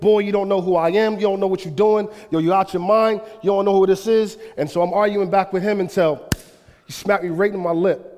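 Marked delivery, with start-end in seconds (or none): 0.0-4.4 angry, threatening rant full of cursing. Retelling a man storming down a hallway at him: imitating someone yelling and cussing. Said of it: "he's yelling and he's cussing and he's swearing".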